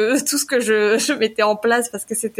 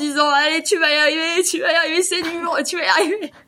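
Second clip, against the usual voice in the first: mock crying, much higher pitched, tearful encouraging tone; 7 semitones higher than usual. Recalling a hard year, retelling crying self-encouragement. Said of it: "Je l'ai écouté en chialant".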